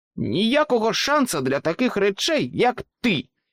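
roaring, booming, thundering voice, pitched high. Narrator reads a fork shouting at a struggling rabbit, thundering. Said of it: "гримнула виделка".

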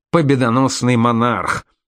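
ordinary delivery

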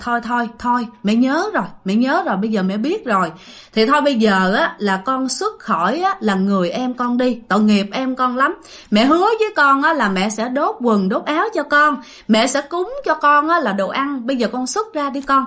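usual speaking voice

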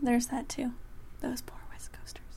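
soft, mock-pitying whisper.

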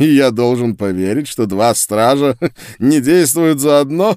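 scornful, mocking, laughing it off. A sorcerer answers a woman defending the guard who helped her, with a mocking, scornful laugh. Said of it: "глумливо рассмеялся чародей".

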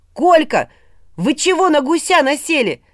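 very high, shrill, loud yelling. Narrator reads a character's line to the others about the goose, shouted. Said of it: "закричал Илья".

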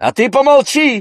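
shrill, very high-pitched, loud yell. A woman snaps back at Bakhshanda after her remark, shouted. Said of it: "крикнула ей".

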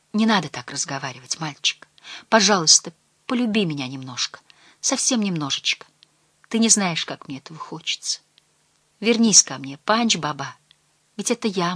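ordinary talk

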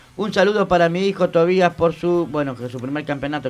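plain

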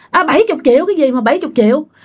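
rapid high-pitched yell.

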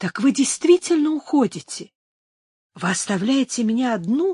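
frightened, faltering voice fading away. Narrator reads a woman's question, voice faltering with fear. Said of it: "спросила она замирающим от страха голосом".

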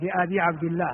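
ordinary delivery

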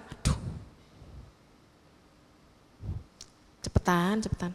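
hushed, impatient, urging whisper. Telling of an old member waiting through a newcomer's long sharing, acting out impatience. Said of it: "Jadi yang lama ini sudah enggak sabar".

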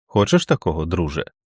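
plain reading voice

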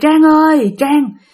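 spooky, unsettling voice. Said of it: "cứ nghe kêu".

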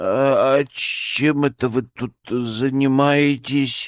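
very slow, faltering, timid mumble. Ponchik asks the pair what they are doing, babbling timidly. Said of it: "Пролепетал Пончик".

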